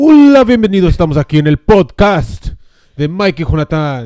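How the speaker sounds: loud, belted voice like ringside commentary. Opening the podcast imitating the WWE Spanish announce team: WWE Spanish announce team voice. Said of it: "I was trying to sound like the Mexican, I mean, the Mexican, the, the Spanish team of".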